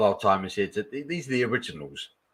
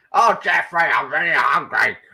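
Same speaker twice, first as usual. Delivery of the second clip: high, loud put-on character voice, pitched up; 7 semitones higher, 6 dB louder than usual. Recalling how a character called him Jeffrey, doing a Zippy impression. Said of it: "That was my impression of Zippy".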